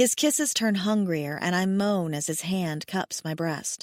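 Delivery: ordinary delivery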